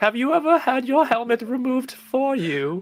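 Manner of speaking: very high, lofty, put-on posh British accent. Speaking in-game as their armor to another player, in a Queen of England voice. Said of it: "Why do you sound like you're from Monty Python?".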